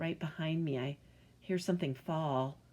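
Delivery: ordinary delivery, nothing marked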